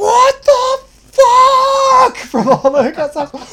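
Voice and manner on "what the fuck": very high, loud, stretched-out shriek. Retelling a night when someone screamed across the house: imitating Mike screaming. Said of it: "I can hear Mike just screaming".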